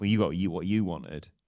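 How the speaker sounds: normal talking voice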